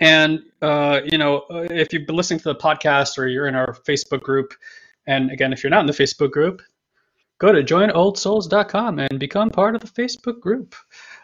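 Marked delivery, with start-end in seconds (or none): 7.4-10.8 salesy promo voice, pitched up. Podcast host plugging their facebook group to listeners, marketing voice. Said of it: "That's my marketing voice".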